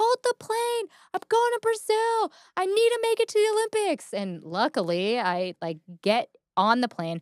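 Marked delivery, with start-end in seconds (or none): 0.0-4.1 screaming, very high, pleading. Retelling a rush through the airport to catch a flight: retelling a scream. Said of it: "I'm just screaming".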